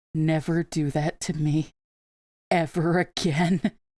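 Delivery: broken, harrowed, earnest and plain. Retelling what a harrowed man said afterward, walking up: speaking very quietly. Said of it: "very quietly went".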